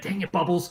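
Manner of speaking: pretend angry voice. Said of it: "in a really angry voice".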